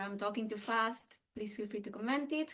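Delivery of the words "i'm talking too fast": ordinary delivery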